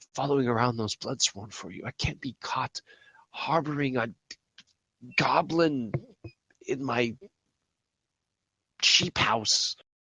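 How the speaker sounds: quiet voice. Voicing a woman refusing to shelter a goblin: hushed tone. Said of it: "she says in, like, a hushed tone".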